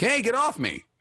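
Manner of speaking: very high-pitched yelling voice. Showing the others a non-player character's line from the game: imitating a yelling NPC. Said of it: "yells at you".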